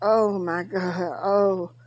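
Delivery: very slow, drawn-out, low pained moan. Retelling how a man moaned and groaned, imitating pained moaning. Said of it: "like he was moaning and groaning like he was in a lot of pain".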